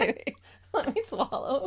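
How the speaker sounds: speaking while laughing. Trying to get through the greeting to listeners, still laughing. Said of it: "I'm laughing still".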